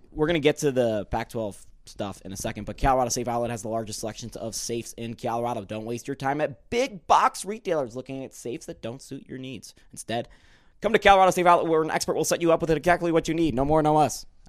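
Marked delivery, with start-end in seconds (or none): 2.7-14.3 rushed, way too fast, rattled-off ad-read delivery. Host reads an ad, then admits it was too fast: way too fast. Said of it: "I said that way too fast".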